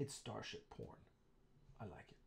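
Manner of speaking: put-on very soft whisper with a German accent. Tobias tells Alec about reading his script during a location shoot, in Tobias's German accent. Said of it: "because he's German, so he speaks with, with a German accent".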